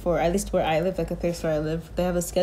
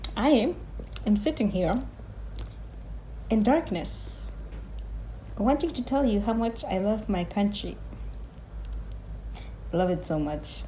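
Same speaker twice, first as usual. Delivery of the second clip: whispered sarcasm, breathy; 3 semitones higher, 4 dB quieter than usual. A vlogger sitting in darkness addressing viewers, sarcastic. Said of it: "That's sarcasm".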